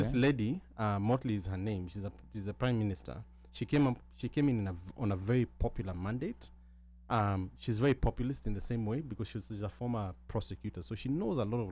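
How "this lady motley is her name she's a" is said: usual speaking voice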